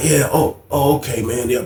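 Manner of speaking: mock, soft, slow, halting, a little frightened. The speaker acts out Paul in the middle of the madness, imitating Paul sounding frightened. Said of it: "I hear his voice and I can tell that he's a little".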